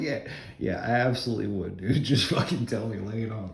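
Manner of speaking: overdone, fake eagerness, plainly sarcastic. Retelling your answer when he called with news, retelling a sarcastic reply. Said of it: "I'm a sarcastic person".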